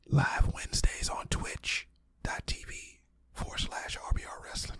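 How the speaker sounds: breathy, hushed whisper throughout. Host plugging a weekly wrestling show live on twitch, whispering. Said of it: "I don't know why I'm whispering".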